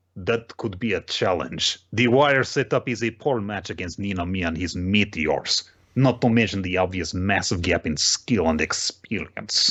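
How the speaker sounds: put-on speaking in a Russian accent. Recapping an episode and voicing Kitora's reply, in Kitora's Russian voice. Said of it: "my Russian Kitora voice".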